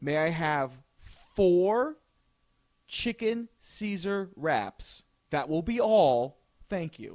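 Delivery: slow, deliberately slowed, carefully enunciated speech. Retelling how they placed a food order, slow, careful ordering. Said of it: "I made sure to slow down".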